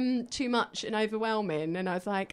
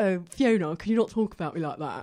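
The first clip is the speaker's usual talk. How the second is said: mocking, polished, posh, well-spoken put-on voice; 5 semitones lower, 3 dB louder than usual. Retelling how she imitated an ex on stage: imitating a well-spoken ex. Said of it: "he's quite well spoken. So I'd be like".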